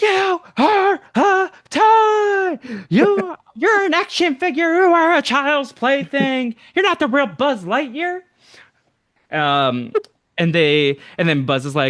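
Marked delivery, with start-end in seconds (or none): 0.0-8.2 very high snapping tirade, "toy" stretched out. Speaker retells a movie scene, acting out Woody snapping at Buzz. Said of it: "this is where Woody snaps".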